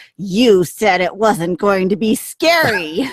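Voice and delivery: mock slow, furious seething through clenched teeth. Retelling what a little girl said to her mom after a ride, imitating gritted-teeth fury. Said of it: "with her teeth gritted".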